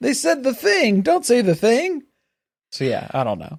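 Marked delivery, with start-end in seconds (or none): 0.0-2.0 very high-pitched comic character voice. Acting out YouTube flagging a word: Barney Fife voice. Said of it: "that I read in my voice there".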